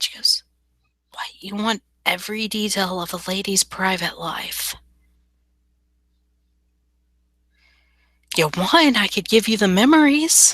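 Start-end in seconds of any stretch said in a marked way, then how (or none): 1.1-10.6 hushed, whispered speech. A woman leans forward and answers the man questioning her, whispering. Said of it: "she'll lean forward so she's whispering to him".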